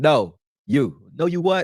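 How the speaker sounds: slow, choppy, robotic one-word-at-a-time speech. Retelling what Rich said, imitating Rich's robotic one-word speech. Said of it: "you like a fucking robot".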